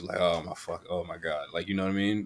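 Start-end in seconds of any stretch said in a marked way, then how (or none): 0.2-1.5 sounds really annoyed. Describing a cartoon character's usual tone, imitating Bob, really annoyed. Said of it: "he's timid or, like, really annoyed, like".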